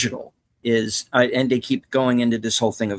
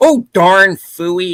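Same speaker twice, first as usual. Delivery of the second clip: exaggerated put-on Upper Midwest accent, higher and louder; 8 semitones higher, 10 dB louder than usual. Imitating a movie character who overdoes the accent: over-the-top Fargo accent. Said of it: "Everybody's doing that Fargo accent".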